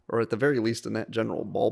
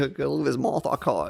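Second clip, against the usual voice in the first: fake, mock southern gentleman accent; 3 semitones higher than usual. Joining the other speaker's bit about a Southern gentleman explaining science: mock Southern gentleman voice. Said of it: "Southern gentleman telling me about science".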